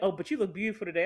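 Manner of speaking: put-on creepy flirty voice. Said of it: "don't tell me I look good in, in that tone".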